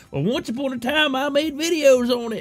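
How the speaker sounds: put-on old grandpa voice. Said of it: "I can be like".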